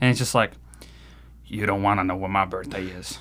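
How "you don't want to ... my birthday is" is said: mock mumble, much lower and quieter. Retelling what a man at the table mumbled under his breath, imitating someone mumbling. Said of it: "I hear him mumble under his breath".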